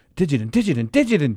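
mock-emphatic, passionate, repeated muttering. Telling someone how they kept repeating a word, imitating emphatic, passionate muttering. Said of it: "very emphatic and just passionate".

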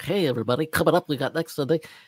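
salesy TV announcer voice. Discussing how TV hosts talk, imitating Regis's announcer voice. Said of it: "he has that announcer yuck".

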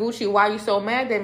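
ordinary delivery

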